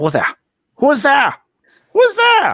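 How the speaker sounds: put-on German accent. Retelling what a woman says when the snoring stops, in a German accent. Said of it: "She just has a German accent".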